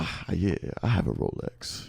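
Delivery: hushed, slow, breathy, lavish rich-guy voice. Imitating the other speaker's Rolex brag: imitating a rich-sounding voice. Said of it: "So you do that with the Ro-".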